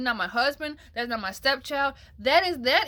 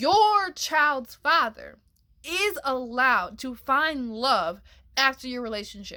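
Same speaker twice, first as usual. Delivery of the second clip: very slow, deliberate, spelled-out delivery. Addressing the ladies directly, saying this really slow. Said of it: "I'll say this really slow".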